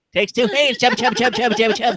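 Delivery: squeaky, high-pitched helium voice.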